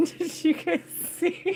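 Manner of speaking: very high voice, talking through laughter. Showing viewers a card during a reading, laughing while talking. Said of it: "Sorry, I gotta laugh".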